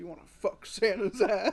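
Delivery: put-on jolly old man voice. Retelling a video to another speaker, Santa Claus voice. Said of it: "And he says".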